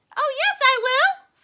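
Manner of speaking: tiny squeak, very high, shrill and loud. Narrator reading a story, the boy answering his parents, Mike Teavee's tiny squeak. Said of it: "squeaked the tiny voice of Mike T V".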